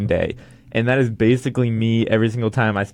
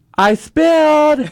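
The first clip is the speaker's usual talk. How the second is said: put-on very high, shrill, loud toddler-like tantrum; 7 dB louder than usual. Retelling faking a kid's tantrum in the kitchen for Mom, mock tantrum. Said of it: "I'll throw a big tantrum like".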